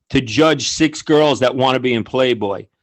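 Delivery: ordinary delivery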